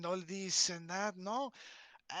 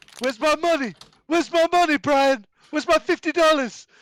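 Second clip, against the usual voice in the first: very loud, shrill, high-pitched posh yelling; 8 semitones higher, 17 dB louder than usual. Doing a posh voice for the others, as if talking to Brian: Stewie Griffin voice. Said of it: "It almost sounds like Stewie Griffin".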